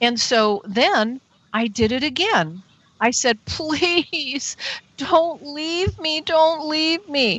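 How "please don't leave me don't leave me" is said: play-acted crying, tearful, high-pitched, begging plea. Recounting their own past words, retelling a tearful plea. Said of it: "I'm crying".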